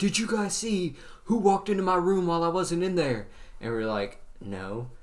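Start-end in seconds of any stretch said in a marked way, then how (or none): 0.0-3.3 mock screamed, high-pitched screaming voice. Telling how Coach Lynch ran into class questioning the students; retelling a scream. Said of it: "He's like screaming".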